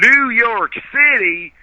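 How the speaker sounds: very loud, very high-pitched southern twang. Retelling how the Texans all repeated his answer, in a southern accent. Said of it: "they repeat in their southern accents".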